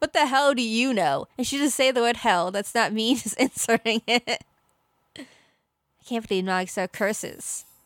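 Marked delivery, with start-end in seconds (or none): 0.0-1.3 yelled line. A speaker recaps a scene for co-hosts, imitating Nagisa shouting. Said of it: "she's just shouting".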